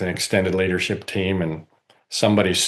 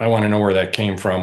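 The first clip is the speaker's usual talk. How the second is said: plain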